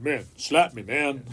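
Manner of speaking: goofy, weird, dumb-sounding put-on voice. Acting out someone asking for a slap: weird stupid voice. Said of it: "That was a weird, stupid voice".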